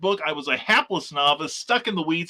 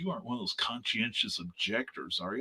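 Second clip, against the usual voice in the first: chilly, cold, unfriendly tone; 6 semitones lower, 10 dB quieter than usual. Retelling a phone call with a Marine recruiter: imitating a cold tone. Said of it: "he gets real cold".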